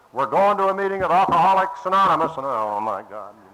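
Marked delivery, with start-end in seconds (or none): 0.2-2.4 loud, high-pitched, bellowed yelled announcement. Recounting the bus driver opening the door and yelling out, retelling a bus driver's yell. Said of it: "he just yells out".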